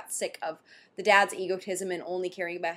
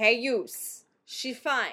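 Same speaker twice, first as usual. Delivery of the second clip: put-on New Jersey accent; 4 semitones higher than usual. Imitating how a man phoned a daughter's parents in a voice: new jersey accent. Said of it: "It was like a New Jersey voice".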